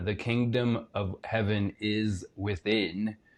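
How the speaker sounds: slowed, each word placed. In a conversation, repeating a phrase more slowly for the other speaker, said slower. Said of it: "Let me say that slower".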